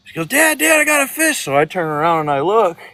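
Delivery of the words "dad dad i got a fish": acted, very high, shrill, excited yell. Retelling a fishing memory, little sister calling to her dad: imitating sister yelling. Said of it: "My sister yells".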